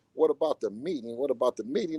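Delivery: normal talking voice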